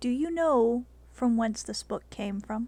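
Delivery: very soft, quick, hushed murmur. In a role-play scene, a character asks a question in a low, very soft voice. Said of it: "In a low and very soft voice".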